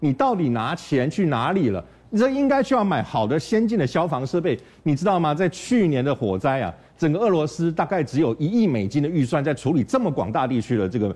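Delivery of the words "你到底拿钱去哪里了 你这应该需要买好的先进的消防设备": ordinary delivery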